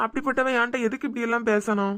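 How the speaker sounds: ordinary delivery, nothing marked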